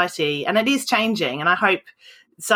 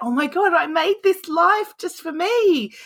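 proud, teary outburst through sobs; 10 semitones higher than usual. Retelling own words while sobbing after a phone call: retelling own sobbing. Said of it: "And I sobbed and I was like".

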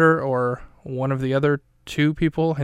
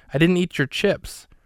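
acted, mild token shout; 4 semitones higher than usual. Retelling a scene where she answers the phone: imitating a yell. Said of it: "she yells into the phone".

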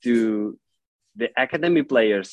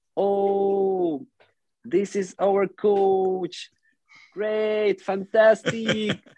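put-on excited children's screams, higher; 10 semitones higher than usual. Retelling how kids react when their coach scores: imitating kids screaming. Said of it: "they are screaming like".

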